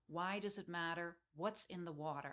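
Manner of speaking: usual speaking voice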